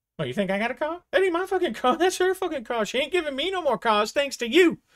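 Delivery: high, loud complaining tone. Jinx asks Fidget for a ride home, and Fidget answers in Fidget's voice. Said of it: "And then he walks off. / Shut up. Shut up, motherfucker".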